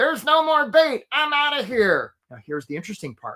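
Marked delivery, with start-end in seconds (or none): 0.0-2.1 very high, strange, pitched-way-up crab voice. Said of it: "despite his weird voice".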